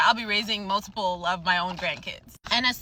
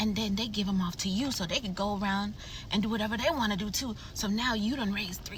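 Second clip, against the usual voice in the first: put-on loud whisper, quieter; 7 dB quieter than usual. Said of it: "she thinks she's whispering".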